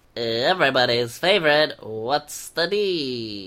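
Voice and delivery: slow announcer voice, "D" drawn out. Introducing a segment as an impression of the other speaker: impression of the other speaker. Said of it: "That's my impression of you saying that".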